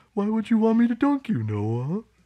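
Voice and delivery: very high, loud sea-cow creature voice. Answering Noah's request to be dunked again, in the manatee voice. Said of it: "Let me hear the Manatee voice now".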